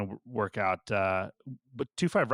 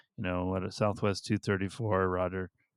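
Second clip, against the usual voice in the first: mock somber voice, much slower; 3 semitones lower than usual. Speaker recounting a flight, imitating an air traffic controller's somber voice. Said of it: "he kind of like had kind of a somber voice".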